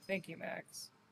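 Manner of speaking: acted defeated, dejected tone. Thanking Max as a character who looks defeated: acting defeated. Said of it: "look kinda defeated and be like".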